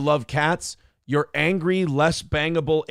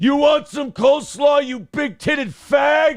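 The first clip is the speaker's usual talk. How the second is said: very high heckling chat-crowd voice, one word stretched; 10 semitones higher, 4 dB louder than usual. Imagine two hated people teaming up for a show; do an impression of how it might sound. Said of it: "It's just my impression of what that show might sound like".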